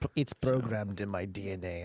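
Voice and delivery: put-on emu voice with a sort of Turkish accent. Answering as the emu why it knows what to do: emu voice with a sort of Turkish accent. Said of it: "That's your emu".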